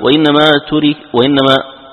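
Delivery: ordinary delivery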